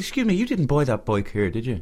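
put-on, embellished Dublin accent, sing-song. Speaker retells what he said to a rude man, in a put-on Dublin accent. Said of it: "I'm putting on the Dublin accent".

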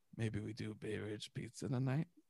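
put-on drunk whisper. Retelling how a partner comes over when drunk: imitating a drunk whisper. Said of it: "come over and whisper in my ear and you go".

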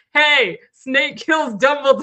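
loud, high, acted-out hollering shout. Retelling a man outside a midnight movie screening, imitating someone shouting. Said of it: "he was shouting".

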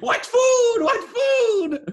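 very loud, very high, shrill street yell, word drawn out. Recalling walking down the street in front of neighbors, retelling own screaming. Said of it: "walk down the street screaming".

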